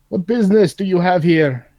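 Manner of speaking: loud, high-pitched yell calling out. Playing a character, calling out to distant giants: yelling out to giants. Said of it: "I'm gonna yell out to the giants".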